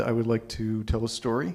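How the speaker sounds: ordinary talk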